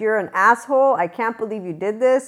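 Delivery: put-on mock yelling. Retelling reacting to a friend's story of what they did; retelling own yelling. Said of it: "Why are you yelling at me?".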